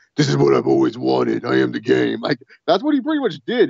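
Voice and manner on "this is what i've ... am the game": low, rough wrestling promo voice. Retelling a wrestler's promo, imitating a wannabe Triple H promo. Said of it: "his best wannabe Triple H promo".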